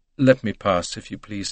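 ordinary delivery

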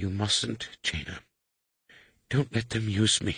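weak, faint, feeble, soft voice. Narrator reading Yulaha calling out to Jaina, in a feeble voice. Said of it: "Yulaha's feeble voice came to her".

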